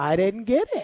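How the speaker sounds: put-on innocent, clueless, playing-dumb voice. Retelling a coworker's smiling denial: imitating someone playing dumb. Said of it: "pretend like he was the old nobody who couldn't figure out anything".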